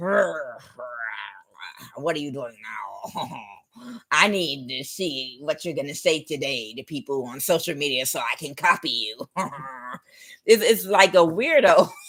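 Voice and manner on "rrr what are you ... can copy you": soft, insecure, cringing, groveling gremlin voice. Mocking an insecure copycat as a creature: groveling gremlin voice. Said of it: "like some kind of groveling gremlin".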